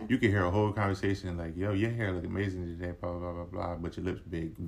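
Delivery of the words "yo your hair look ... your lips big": ordinary talk, nothing marked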